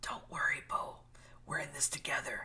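soft, hushed whisper. Reading a comic page aloud, Sue reassuring Bo in the water: whispering. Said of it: "And Sue whispers".

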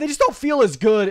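voice suddenly shooting upward, high. Explaining why the Vikings moved down a spot: voice suddenly going high. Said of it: "my voice got really high there".

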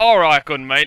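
put-on Australian accent. Trying out accents with other players, one does an australian accent.

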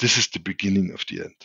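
hushed half-whisper, under the breath. Retelling how a pale political officer came in: imitating someone half-whispering. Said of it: "just whispering to himself".

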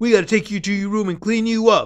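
loud, shrill, berating public yell. Retelling a woman yelling at an old lady in the cafeteria, retelling a yell. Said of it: "She's like yelling this for everybody to hear".

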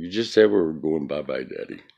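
ordinary delivery

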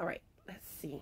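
soft whisper, voice giving out. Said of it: "my voice is starting to try to start going out".

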